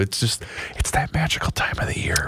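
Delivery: soft unvoiced whisper.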